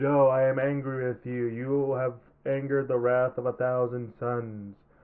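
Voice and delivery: emotionless, flat robotic monotone voice. Giving an example of how a dub sounded, in a flat robotic monotone. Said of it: "monotone, robotic, no emotion in it".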